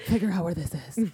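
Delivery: put-on stern alien villain voice. Picturing a shadowy spy giving orders: voice like Nebula. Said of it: "You sound like Nebula".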